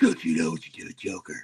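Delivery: gruff, gravelly put-on character voice.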